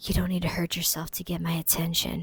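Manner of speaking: hushed, seductive stage whisper. Retelling a show scene where Jeremiah catches Belly: imitating Jeremiah's seductive half-whisper. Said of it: "whispers in her ear so, like, seductively".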